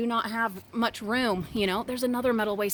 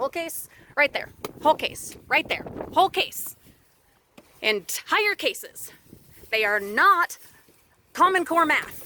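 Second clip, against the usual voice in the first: fed-up, angry, insistent yelling; 5 semitones higher, 5 dB louder than usual. Speaker talking to viewers while grabbing whole cases, yelling at viewers. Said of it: "now I'm yelling at you guys".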